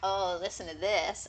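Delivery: ordinary talk, nothing marked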